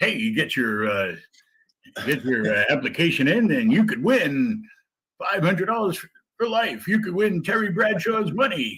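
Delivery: put-on game-show announcer voice. Asked for a background announcer, the speaker does The Price is Right announcer voice. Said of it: "the background announcer for like The Price is Right".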